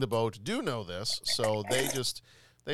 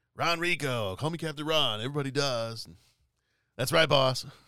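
gravelly, raspy pirate voice; 3 semitones higher than usual. Describing a character hired in a story, quoting his introduction: Captain Ron gravelly pirate voice. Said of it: "that gravelly, raspy pirate voice".

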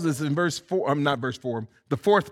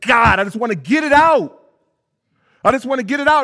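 rapid, fast-paced speech, louder; 8 semitones higher, 7 dB louder than usual. Retelling Paul's words about the whole book, talking fast. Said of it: "he's just talking fast".

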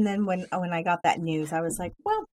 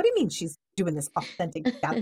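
angry, worked-up, indignant outburst. Retelling an earlier reaction to hearing the plan: imitating own angry reaction. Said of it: "so mad".

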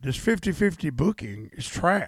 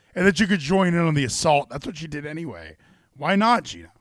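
ordinary delivery

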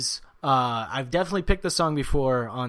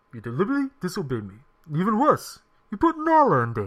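lion voice, pitched higher; 3 semitones higher than usual. Doing a movie-character impression for another speaker, Mufasa impression. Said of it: "And that was Mufasa".

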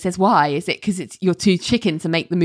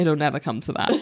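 mock, very deadpan flat delivery; 3 semitones lower, 4 dB quieter than usual. Speaker acts out one character's reply to another: imitating a really deadpan delivery. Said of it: "Renee is like really deadpan".

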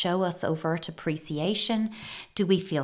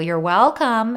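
snide sarcastic tone, much louder; 5 semitones higher, 10 dB louder than usual. Illustrating the reply when someone walks past a held door, sarcastic 'you're welcome'. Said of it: "in that sarcastic way".

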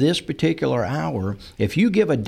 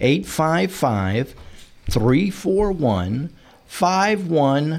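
slow, deliberate, unhurried, spaced out. Repeating a phone number so listeners can write it down, said slowly. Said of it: "I'm saying it slowly".

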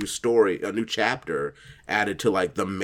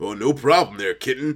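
doting fatherly voice, higher pitch; 12 semitones higher, 10 dB louder than usual. A father answers his young daughter's request, indulging her affectionately, in a doting dad voice. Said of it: "do this in your Larry and his daughter voice".

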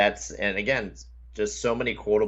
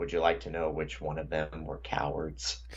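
put-on deadpan delivery, lower and quieter; 4 semitones lower, 6 dB quieter than usual. Retelling a man turning to the camera, imitating a deadpan delivery.

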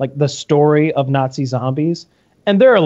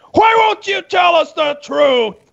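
put-on very high, raw, rough scream. Acting out a man screaming at dog mess, imitating someone screaming. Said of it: "He's screaming at it".

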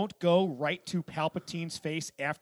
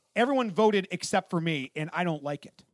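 normal talking voice

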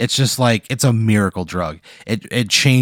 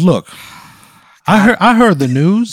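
loud, very high, blustery cartoon rooster voice, belted; 10 semitones higher, 7 dB louder than usual. Retelling what the time-traveling quilt said to Pat, in a Foghorn Leghorn voice. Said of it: "He sounds like a like foghorn leghorn almost".

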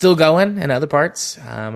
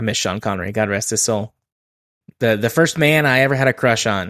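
usual speaking voice

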